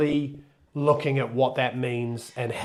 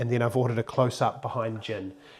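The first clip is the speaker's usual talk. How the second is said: ordinary talk, nothing marked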